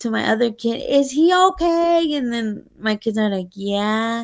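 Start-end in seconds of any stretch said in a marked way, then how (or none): 0.9-2.1 acted-out high, anxious yell, calling across distance. Retelling how he yelled through the house to the speaker's other kid, imitating someone yelling. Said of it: "he's yelling through the house".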